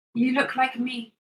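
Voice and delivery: small voice. In a tabletop game, a small voice speaks to a player's character: small voice. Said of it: "you hear a small voice".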